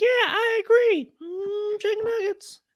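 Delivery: goofy, very high-pitched, slow put-on puppet voice. Showing the same personality in a different voice: put-on puppet voice. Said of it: "same personality, just different voice".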